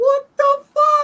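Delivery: high, loud bawling. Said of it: "I'm sitting here bawling".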